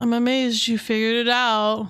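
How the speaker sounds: sarcasm at full strength, most sarcastic possible. Reading a line aloud in the most sarcastic way. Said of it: "I read this in the most sarcastic way".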